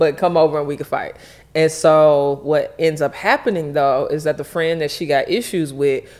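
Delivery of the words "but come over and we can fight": ordinary delivery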